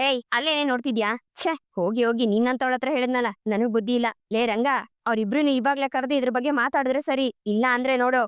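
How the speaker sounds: ordinary delivery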